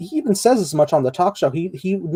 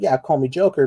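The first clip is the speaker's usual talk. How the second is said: plain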